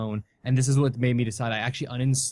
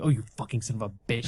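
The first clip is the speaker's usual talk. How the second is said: acted-out angry, furious voice, faster pace. Recalling watching a movie whenever a character came on screen: retelling an angry outburst. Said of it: "I've never been that angry ever in my life".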